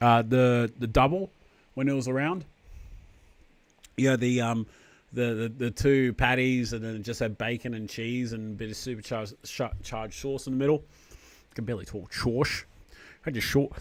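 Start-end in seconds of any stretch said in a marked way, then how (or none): 12.1-13.7 bad put-on Scottish accent, quieter. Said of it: "sound like Sean Connery".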